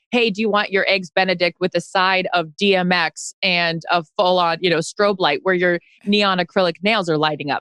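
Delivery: normal talking voice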